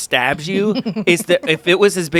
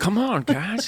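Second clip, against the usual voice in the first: soft, light, higher coaxing voice; 6 semitones higher, 6 dB quieter than usual. Imagining leading tiny horses away: Owen Wilson voice. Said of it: "pull a little, uh, uh, Owen Wilson from, uh, Night at the Museum".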